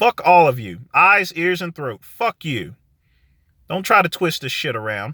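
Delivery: slightly upset. Ending the video, the speaker addresses people who twist his words: a little upset. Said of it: "I'm sorry if I sound a little upset".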